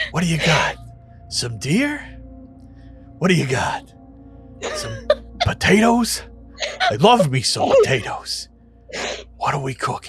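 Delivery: swooping, sing-song talking cauldron voice. Voicing a talking cauldron that speaks into a player's head: voice of a talking cauldron in the head. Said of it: "in your head, you hear it".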